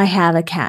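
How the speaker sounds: ordinary talk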